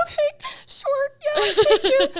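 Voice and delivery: very high, slow, sobbing, crying voice. Retelling own reply to a producer after being cut: retelling own crying reply. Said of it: "And I remember crying, going".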